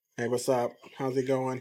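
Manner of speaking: flat, toneless monotone delivery with no inflection. Recalling how they used to greet people, in a flat monotone greeting. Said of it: "I used to constantly be monotoned".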